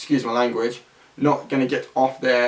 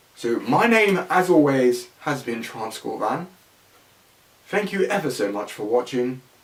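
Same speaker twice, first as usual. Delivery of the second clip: silly, affected, put-on upper-class posh idiot voice. Signing off a video, the YouTuber thanks viewers in a posh idiot voice. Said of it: "I'm speaking like a posh idiot all of a sudden".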